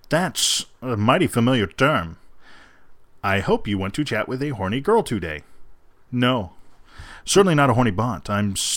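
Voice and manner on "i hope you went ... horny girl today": robotic, mechanical voice. Speaker reads out a chat message from a bot; robot voice. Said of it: "in kind of a robot voice, since they're a bot".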